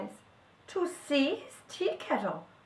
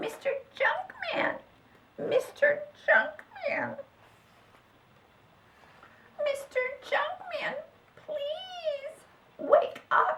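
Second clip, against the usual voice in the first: small, very high squeaky little voice; 13 semitones higher than usual. Narrator reads a voice waking the junkman in the night, a little voice. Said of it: "awakened by a little voice".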